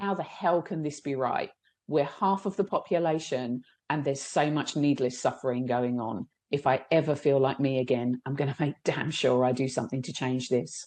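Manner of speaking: ordinary delivery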